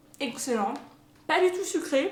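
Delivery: speaking with mouth full. A vlogger tasting the homemade recipe, talking with mouth full. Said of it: "c'est pas bien de parler la bouche pleine".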